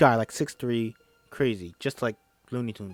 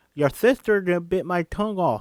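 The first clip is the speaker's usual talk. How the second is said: mock screaming, higher and louder; 7 semitones higher, 4 dB louder than usual. Retelling what a man screamed while banging on the bathroom door, retelling a scream. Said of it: "He's screaming".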